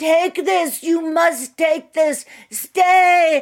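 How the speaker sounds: shrill, booming, very loud, high yell, slowly stretched. Speaker retelling what a man without a ticket yelled at the gate, imitating him yelling. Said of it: "he's yelling".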